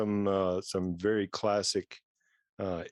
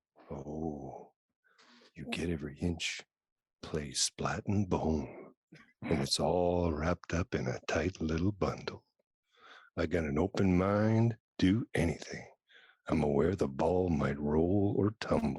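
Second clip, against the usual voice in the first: low, drawn-out put-on seductive voice, lingering oh; 4 semitones lower than usual. Todd reads the lines the others asked him to do, in a sexy voice. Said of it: "do it in your sexy voice".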